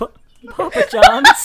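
put-on, shrill, very high, very loud distressed voice. Retelling answering the intercom to a forgotten pizza delivery: imitating a very upset-sounding voice. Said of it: "this just very upset-sounding voice just goes".

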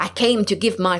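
usual speaking voice

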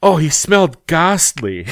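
pompous fake English accent, laid on thick. Retelling what Triple H said in an interview: pompous accent, imitating Triple H. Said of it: "some sort of, like, pompous accent".

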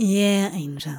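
soft, gentle voice. A man answering the companion who then kisses his temple, in a gentle voice. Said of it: "his voice gentle".

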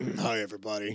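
low quiet growl. Teasing a participant about how he said hi to everybody, Batman-like growl. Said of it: "You didn't sound like Batman this week".

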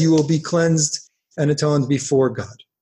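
ordinary talk

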